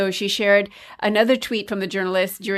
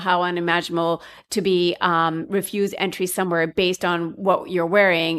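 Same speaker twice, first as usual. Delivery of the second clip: ordinary delivery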